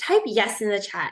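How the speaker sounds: plain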